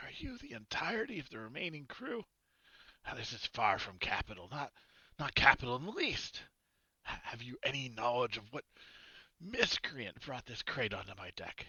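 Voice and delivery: booming, high bellow with wide pitch swings. Captain Reginald addresses the crew once everyone arrives on deck, booming Captain Reginald voice. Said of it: "Captain Reginald bo- booms at you".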